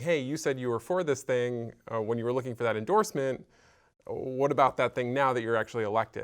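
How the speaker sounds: usual speaking voice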